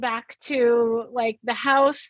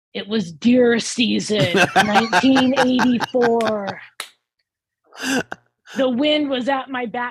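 play-acted traumatized, haunted narration; 4 dB louder than usual. Retelling a man answering whether he had a sighting, mock PTSD flashback recall. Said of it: "it's like a PTSD recall".

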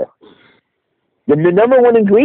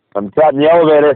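normal talking voice

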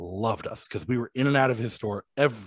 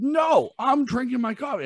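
put-on very high scream, drawn out; 14 semitones higher than usual. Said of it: "back and forth screaming argument".

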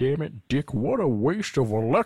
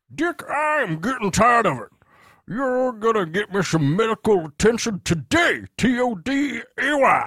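put-on Texan character voice, much higher pitch; 8 semitones higher, 3 dB louder than usual. In a roleplay, a Texas attorney character confronts another character, Foghorn Leghorn-type Texan voice. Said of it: "foghorn leghorn type Texas attorney".

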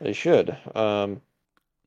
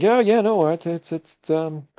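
high, loud, nervous, forced reassuring tone. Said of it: "He's like".

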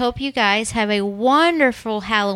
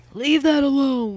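put-on, cross, angry ghost voice; 4 semitones higher than usual. Retelling an apparition heard in a home, imitating an angry ghost voice. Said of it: "there is a angry voice".

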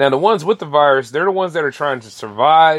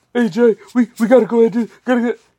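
put-on panicky, panicking voice; 7 semitones higher than usual. Complaining that people haven't learned, mimicking a would-be supervisor: panicky supervisor impression. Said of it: "when I do that voice, I'm pretty much talking like my would-be supervisor".

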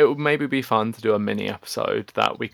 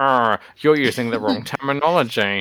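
mock irate, angry nerd voice; 4 dB louder than usual. Imitating angry doll nerds: imitating an angry doll nerd. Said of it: "I don't want angry doll nerds to, like, be like".

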